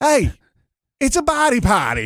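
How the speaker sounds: put-on Australian accent, very high pitched. Mimicking what they say when a player is on tv, put-on australian accent. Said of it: "in our best possible Australian accent".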